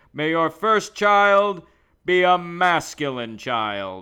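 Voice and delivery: very loud, slow, measured, booming mobster cadence. Recalling a scene from The Godfather: Luca Brasi voice. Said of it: "Luca Brasi in, uh, The Godfather when he's like".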